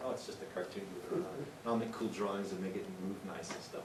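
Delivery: ordinary talk, nothing marked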